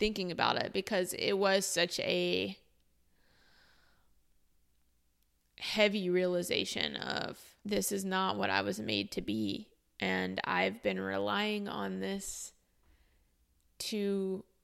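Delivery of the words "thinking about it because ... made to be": close to tears, tearful but still talking. Recalling breaking down after refunding someone on the phone, getting teary-eyed. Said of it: "I honestly am getting teary-eyed right now".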